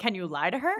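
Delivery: ordinary talk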